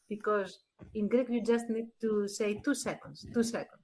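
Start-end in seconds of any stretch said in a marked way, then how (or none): 2.6-3.6 mock whisper, breathy and utterly calm. Imitating how she interrupts a speaker: imitating a very calm interruption. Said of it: "very, very calm way".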